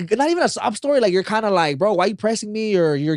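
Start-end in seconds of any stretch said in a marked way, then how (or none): 1.8-2.8 mock rude defensive tone, higher pitch. Imagining someone's reply when asked to repay a loan: imitating a defensive, rude reply. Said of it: "you're very defensive about it in, like, a rude way".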